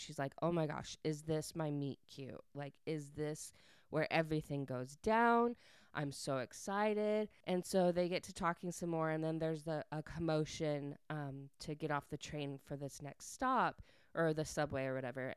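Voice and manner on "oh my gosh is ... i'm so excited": bubbling, thrilled, excited chatter. Retelling a book's plot, acting out a character getting really excited. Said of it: "she gets really excited".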